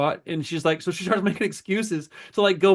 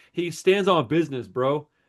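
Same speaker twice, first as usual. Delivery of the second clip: usual speaking voice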